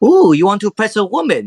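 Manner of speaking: put-on French accent. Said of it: "a French type of accent going on here".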